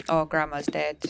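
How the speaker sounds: ordinary talk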